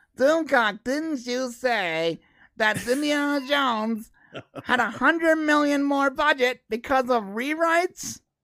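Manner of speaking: very slow, high-pitched put-on puppet voice. Performing a line after being asked to do the puppet voice. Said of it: "Do the puppet voice again".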